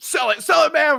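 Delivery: play-acted, very high-pitched, freaked-out and frantic. Retelling urging a friend to sell a game item, retelling freaking out. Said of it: "We're all like freaking out".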